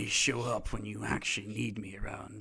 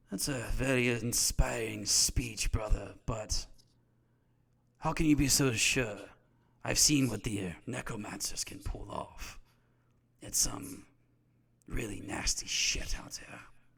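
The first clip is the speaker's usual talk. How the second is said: smug, cocky, reptile-like sneering voice. The narrator voices someone speaking from a mirror, in a very cocky, reptilian voice. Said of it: "like a very cocky, like reptilian voice".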